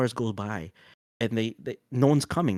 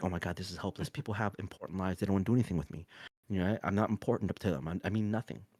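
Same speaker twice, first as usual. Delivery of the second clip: put-on hopeless voice, lower and quieter; 4 semitones lower, 7 dB quieter than usual. Acting out a person stuck in a well who is losing hope: acting out despair. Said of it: "as they're starting to despair".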